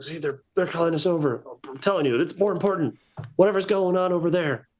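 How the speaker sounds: high, rushed, a little frantic, slightly panicky. Voicing the one in the group who was panicking a little, slightly panicked. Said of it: "the one that was panicking a little bit".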